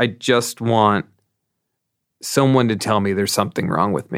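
normal talking voice

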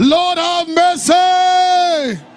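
loud shouting. Retelling how a blind man shouted louder despite being told to stop: imitating Bartimaeus shouting. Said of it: "he increased his shouting".

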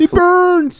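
whiny, crying, very high, slow whimper. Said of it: "I'm like".

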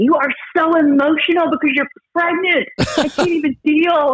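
mock, shrill, heated, high-pitched yelling. Retelling a clubhouse argument, quoting the man yelling back at her: retelling his yelling. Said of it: "And then he starts yelling at me".

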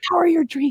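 hushed whisper. Acting out a safe in the home that opens and speaks: whispering. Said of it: "not just whispers".

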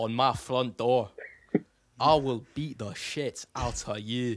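put-on Scottish brogue accent. Violent bit about stolen Scotch eggs, in a put-on Scottish accent. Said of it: "that's my Scottish attempt".

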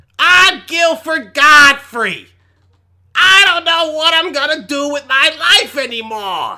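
shrill, very high, loud, slow stretched-out put-on voice. Showing viewers how Gilbert Gottfried is: Gilbert Gottfried impression. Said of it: "that's my best impersonation".

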